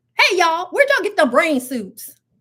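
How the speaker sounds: put-on strong rural country accent. Retelling what a man said as we ran in, imitating a country accent. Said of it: "just to hear that that accent".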